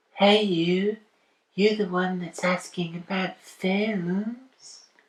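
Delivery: silly put-on voice, slow, high, "films" stretched out. Voicing a character in a film scene: funny voice for a character. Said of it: "my voices sound like me doing a funny voice".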